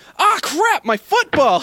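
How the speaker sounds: long, drawn-out scream pitched very high. Telling a story about a forgotten calzone burning during a shift, retelling a scream. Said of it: "I screamed".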